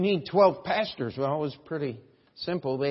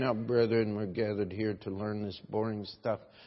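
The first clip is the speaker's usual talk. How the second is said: lifeless, dead bored, unexcited low drone; 5 semitones lower, 5 dB quieter than usual. A speaker mocks bible teachers who lack passion: mock dead, unexcited preaching. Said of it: "so dead and unexcited about it".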